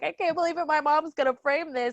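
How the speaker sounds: high, tearful, overcome crying voice. Retelling a student's reaction to his final grade: imitating someone crying. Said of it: "he was, like, crying".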